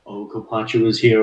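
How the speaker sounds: plain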